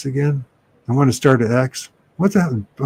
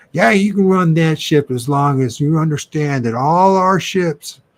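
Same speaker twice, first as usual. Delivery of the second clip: play-acted menacing snarl; 3 semitones higher than usual. Retelling a scene where a nasty character threatens another man, mimicking a snarl. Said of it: "he snarls at him".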